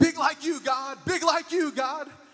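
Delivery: mock excited, loud, high-pitched shout. Retelling a boy yelling into the wind during a storm: imitating someone yelling. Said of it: "he's yelling out".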